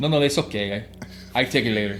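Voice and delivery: put-on Spanish-accented English. Retelling turning down money, for non-spanish speakers: spanish accent. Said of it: "I'm going to say it in an accent for people who don't speak Spanish".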